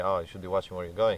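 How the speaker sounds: ordinary delivery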